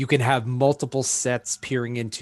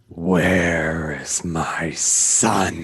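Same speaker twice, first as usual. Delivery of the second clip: low, slow, heavy-bassed growl. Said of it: "this low, heavy-bassed growl".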